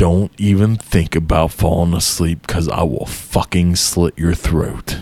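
low, menacing, sinister, creepy voice. Retelling what a man said from the doorway, imitating his creepy voice. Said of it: "in the creepiest fucking voice I'd ever heard".

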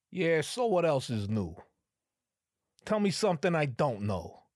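put-on, old-school Brooklyn street-talk accent. Speaker riffing on an old-school colloquialism, slipping into a Brooklyn accent. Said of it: "I don't know why I went into Brooklyn".

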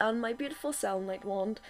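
normal talking voice

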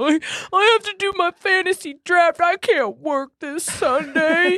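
very high, slow, drawn-out football-bro voice. Speaker imitates the boys skipping work for their fantasy draft; impression of the boys. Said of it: "That was a really good impression".

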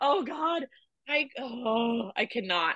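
emotional, choked-up voice, very slow halting words. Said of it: "I can't talk about this".

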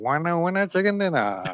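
nasal, nose pinched. Showing how someone says a catchphrase, in a pinched-nose voice. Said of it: "Like if the nose was pinched".

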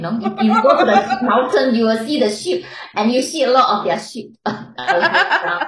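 laughing through the words.

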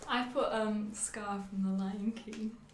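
shy, timid, bashful. Answering the host's question about her favorite movie villain, shy. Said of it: "I don't know why you're saying that in a shy voice".

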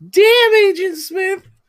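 very high, loud, wild excited yell.

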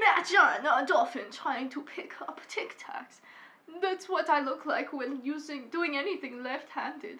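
put-on accent drifting into Swedish. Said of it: "I turned Swedish".

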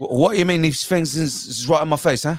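put-on Cockney accent. Discussing accents, quoting the guy who plays Eggsy: Cockney accent. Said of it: "that's a Cockney accent".

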